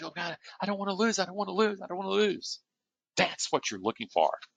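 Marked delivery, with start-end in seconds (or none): 0.0-2.6 put-on high, panicked, scared little child's voice. Demonstrating the adaptive inner voice for listeners: panicked, childlike voice. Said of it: "this panicked, childlike voice".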